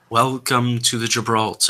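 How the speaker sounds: very low, drawn-out voice. Voicing a voice heard underneath a sound, greeting guests: very low, drawn voice. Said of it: "A very low, very drawn sort of voice".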